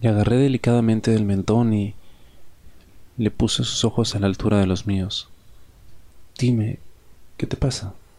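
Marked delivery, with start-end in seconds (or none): 6.4-7.9 concerned, worried tone. Narrator to someone avoiding their gaze, asking with concern. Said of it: "Le dije con preocupación".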